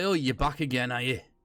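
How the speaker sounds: put-on Yorkshire-accented character voice. Recreating a character greeting the returning group, in a Yorkshire accent. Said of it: "I'm sure he was Yorkshire".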